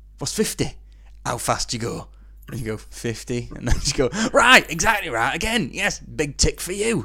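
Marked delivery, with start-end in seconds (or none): 4.3-7.0 high, loud, put-on Yorkshire woman's voice. Retelling what she said while marking the quiz answers: Yorkshire woman's voice. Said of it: "I can't do a woman's voice in Yorkshire".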